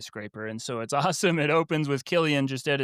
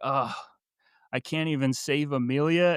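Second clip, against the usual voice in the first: mock dejected voice, slower. Recapping a scene with others, acting out a character, imitating a dejected voice. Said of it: "he's so dejected".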